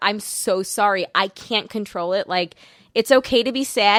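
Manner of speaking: mock crying, slow, broken-down sobbing words. Retelling what was said to a child at bedtime: retelling own sobbing words. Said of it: "shaking and sobbing".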